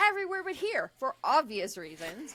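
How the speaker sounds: very loud, high, barked voice. Retelling how a woman scolded them for taking pictures, retelling a barked retort. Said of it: "she scowls and barks".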